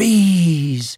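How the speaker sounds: exclaiming with the word "bees" stretched long. Narrator reads Pooh's line as his eyes open very wide, crying out. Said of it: "he cried".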